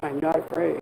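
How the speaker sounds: as deep as it goes, soft and low. Speaker repeats their own line in their lowest possible voice. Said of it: "I can say that in my lowest possible voice".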